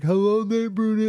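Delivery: very high-pitched, mocking, put-on dumb voice. Retelling how a school bully taunted the speaker every day, imitating a bully's dumb voice. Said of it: "he would just do this dumb voice like".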